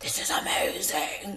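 breathy, airy whispered voice. Mimicking the other speaker's reaction: imitating the other speaker's voice. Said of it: "That voice".

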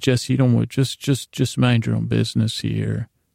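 ordinary talk

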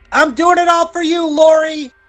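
very high, piercing, shrieking scream. Voicing a maid about to jump from a roof: screaming. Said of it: "and she screams".

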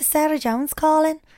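slight Irish accent slipping in. Rehearsing a voice for a prank phone call, slipping into a bit of Irish accent. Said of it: "you went into a bit of Irish then".

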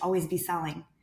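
ordinary talk

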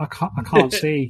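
soft, quiet little whimpering voice. Narrator voicing Hanash after he leaps back out, blinded: Hanash quietly whimpering. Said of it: "quietly whimpering as he's like".

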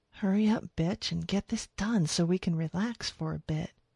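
hushed whisper under her breath. She speaks before helping a frightened man off the truck, whispered. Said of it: "she whispered".

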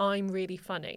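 ordinary talk, nothing marked

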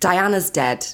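ordinary talk, nothing marked

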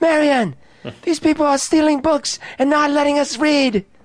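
calling out at top of voice, very high and loud. Playing a character in a game, calling to Marion: yelling at Marion. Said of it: "I'm yelling that".

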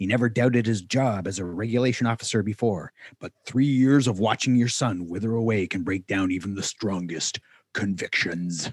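movie trailer voiceover voice. Reading a book's back cover blurb aloud: movie trailer voice. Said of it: "I love your movie trailer voice".

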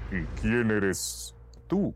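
low, deep, grave voice. Narrator reads a stone lion's question to the startled shepherdess, deep voice. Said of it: "la pastora escuchó una voz grave".

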